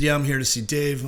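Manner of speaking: ordinary talk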